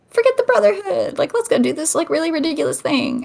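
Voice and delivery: tempting devilish half-whisper. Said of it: "the devil constantly whispering in your ear".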